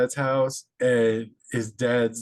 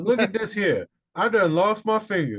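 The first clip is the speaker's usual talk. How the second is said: put-on Louisiana Cajun accent, pitched up; 9 semitones higher than usual. Speaker imagines coming back after an alligator bite, in a Cajun accent. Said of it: "And got a Cajun accent in the".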